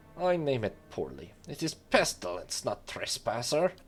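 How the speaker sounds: exasperated hissing creature voice with a rattle. Narrator voicing the Vithrak after it studies you, a rattling frustrated hiss. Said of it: "At last it lets out a rattling hiss".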